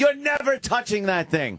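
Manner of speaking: acted-out shouting. Retelling reacting to people on a TV show, retelling yelling at the TV. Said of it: "I'm yelling at the TV going".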